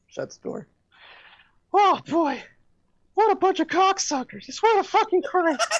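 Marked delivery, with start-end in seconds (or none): 1.7-5.8 very high-pitched cartoon mouse voice. Doing an impression of Mickey Mouse alone after guests leave: Mickey Mouse voice. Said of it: "Mickey Mouse".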